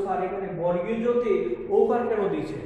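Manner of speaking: ordinary delivery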